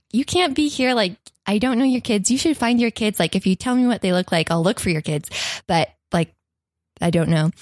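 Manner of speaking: plain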